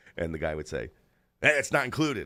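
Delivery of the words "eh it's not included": put-on, weird, loud, pitched-up sarcastic tone. Retelling a movie scene where the house owner shows a window: imitating a sarcastic, weird homeowner. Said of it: "kinda sarcastic and weird".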